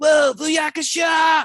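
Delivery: very high, very loud whooping shout. Speaker gives an example of a take to avoid: imitating Greg Cipes's Mikey. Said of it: "where he's like".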